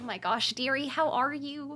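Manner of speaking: put-on Midwestern accent. Showing the most Midwest type of voice, in a Midwestern accent. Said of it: "This is the most like Midwest".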